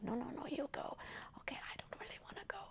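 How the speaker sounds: soft, hushed whisper close to the mic. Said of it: "whispers like".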